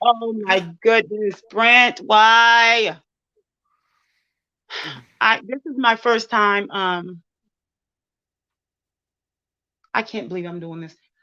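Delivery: holding back tears. Speaker, doing this for the first time, holding back tears. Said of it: "I'm trying my best not to cry".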